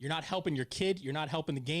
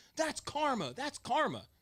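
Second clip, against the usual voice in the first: very high, stretched-out, drawn-out yell; 10 semitones higher than usual. Retelling a coach yelling at the girls on the field: imitating a coach yelling. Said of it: "he's yelling out into the field".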